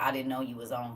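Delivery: ordinary delivery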